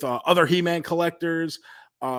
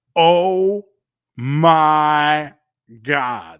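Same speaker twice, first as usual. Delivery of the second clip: loud, belted exclamation, "my" drawn out; 6 dB louder than usual. Reacting to a surprise reveal in a final scene: Janice from Friends voice. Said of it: "like Janice from Friends".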